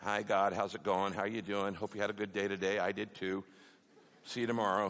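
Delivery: low, soft, offhand, perfunctory casual tone. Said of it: "God gets so bored with perfunctory prayers".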